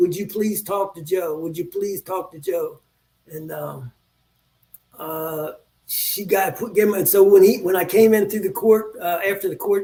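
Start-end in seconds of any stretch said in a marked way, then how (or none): 0.0-2.8 put-on pleading, much quieter. Retelling his girlfriend asking a man in an office on his behalf, imitating her pleading. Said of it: "my girlfriend was there pleading".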